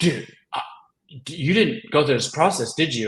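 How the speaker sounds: flustered, alarmed, panicked, stumbling speech. Retelling a call from a rep, imitating a panicking rep. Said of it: "he's, like, panicking 'cause he's like".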